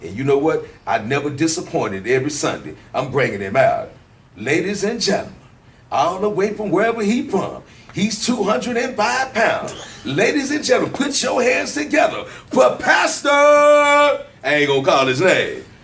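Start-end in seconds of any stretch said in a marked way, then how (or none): 4.3-13.3 hyped, big ring announcer voice, pitched up. Speaker re-enacts how he introduced the pastor every sunday, hype announcer style. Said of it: "that's how I brought him out".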